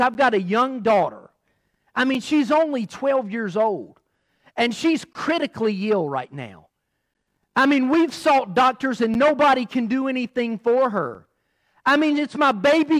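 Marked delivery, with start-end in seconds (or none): none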